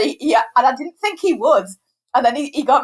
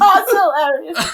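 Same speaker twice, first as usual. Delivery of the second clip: acted forced laughter, high and gushing, near tears; 5 semitones higher than usual. Retelling laughing at a teenager's unfunny joke: laughing till crying. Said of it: "crying, laughing, going".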